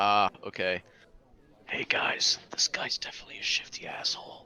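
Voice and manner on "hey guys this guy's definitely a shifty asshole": loud stage whisper meant to carry. Warning the group about a suspicious character: in-character loud whisper. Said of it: "loudly whispering".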